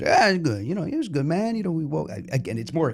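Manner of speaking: loose, meandering, offhand delivery, trailing off half-finished. Retelling someone's answer to an interview question, Cliff Lee impression. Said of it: "impression of Cliff Lee; Forget the voice".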